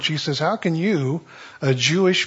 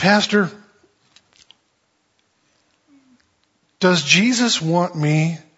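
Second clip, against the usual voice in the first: mock teary, slow, choked-up voice near crying; 3 semitones higher than usual. Retelling a sad woman from the class asking the pastor, imitating a choked-up, tearful voice. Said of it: "a choked up, tearful woman's voice".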